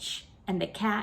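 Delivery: ordinary delivery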